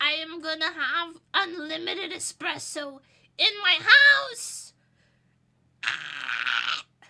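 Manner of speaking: very loud demonic overexcited bellow, drawn-out 'ah'. Announcing a new espresso machine, overexcited Satan-like outburst. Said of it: "that was Satan again".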